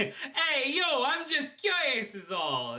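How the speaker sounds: put-on slow, high-pitched New York accent. Reading Richter's game line: New York accent as Richter. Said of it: "a New York accent".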